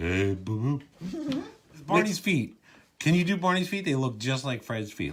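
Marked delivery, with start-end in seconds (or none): 0.0-1.4 deep put-on cartoon bear voice. Trading cartoon voice impressions, doing a Yogi Bear impression. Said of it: "all I can hear is Boo Boo now".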